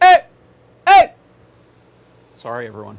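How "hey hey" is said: very loud, shrill, high-pitched screaming yell. Testing mic calibration, warning everyone first: screaming at the mic. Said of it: "I'm going to just scream at it".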